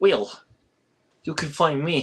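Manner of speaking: fake German accent sounding Russian. Telling viewers where to find him online, in a bad German accent. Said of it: "Okay, I'll stop".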